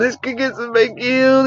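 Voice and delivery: put-on fake crying. Imitating people who said this while fake crying: imitating fake crying. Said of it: "doing the fake play crying".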